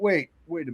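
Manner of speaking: normal talking voice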